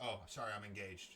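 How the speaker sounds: sweet, nice, polite and apologetic tone. Retelling the reply to a man after a show, saying it nicely. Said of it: "I said it so nice".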